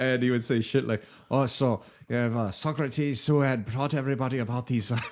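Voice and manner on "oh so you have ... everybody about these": put-on Irish accent, higher. Imitating a Roman culture professor from Northern Ireland: imitating a professor's Irish accent. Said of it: "an Irish accent".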